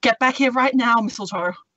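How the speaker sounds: firm, stern, commanding scolding tone. Val uses thaumaturgy to make her eyes glow and voice boom: booming voice. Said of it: "make her eyes glow and her voice boom".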